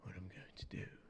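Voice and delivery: put-on breathy whisper. Imitating Loki's whispered, heavy-breathing interrogation line: imitating Loki whispering. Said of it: "Loki's like".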